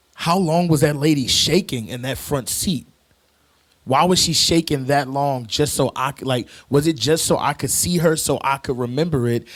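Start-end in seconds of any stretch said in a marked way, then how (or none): none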